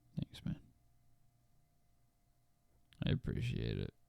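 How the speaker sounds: half-whispered, joyless, breathy, unhappy murmur. Thanking the other speaker for congratulations on being the happy friend, not sounding happy. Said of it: "You just didn't sound very happy".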